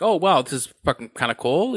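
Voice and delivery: ordinary talk, nothing marked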